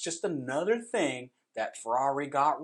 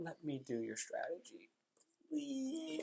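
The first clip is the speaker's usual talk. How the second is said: hushed, very soft, fake begging; 4 semitones higher, 14 dB quieter than usual. Jokingly begging a racing team to let them run its strategy: mock pleading. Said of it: "I'm pleading with you. I'm begging you".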